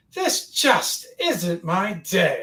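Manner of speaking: odd, swooping sing-song character voice. Narrating a tabletop scene, a voice calls from the south, high-pitched voice. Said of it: "this kind of high pitched voice say".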